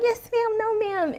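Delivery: put-on very high, slow, meek little-creature voice. Retelling being quiet at a salon: imitating own meek and mild voice. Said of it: "meek and mild little creature".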